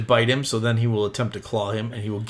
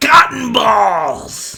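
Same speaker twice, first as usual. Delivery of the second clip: shrill, very high, very loud shriek; 12 semitones higher, 8 dB louder than usual. Voicing a frustrated creature screaming at a player: screaming in character. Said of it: "he screams at you".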